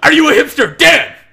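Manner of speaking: very loud, very high, shrill full-blast yell. Asking the group a question for Dan, yelling loudly. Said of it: "Don't yell so loud".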